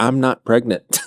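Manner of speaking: put-on devastated woman's voice. Retelling a woman's reply after being called pregnant: imitating a devastated woman. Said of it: "she's wrecked and says".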